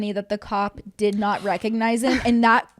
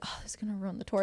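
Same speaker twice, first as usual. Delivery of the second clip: put-on muttering under the breath, quieter; 3 semitones lower, 14 dB quieter than usual. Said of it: "under his breath".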